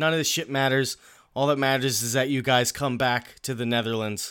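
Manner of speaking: usual speaking voice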